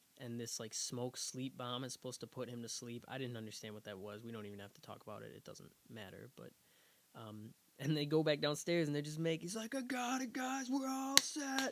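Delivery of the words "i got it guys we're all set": yelling, higher pitch. Retelling a movie scene where a character announces success: imitating someone yelling. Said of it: "he's yelling".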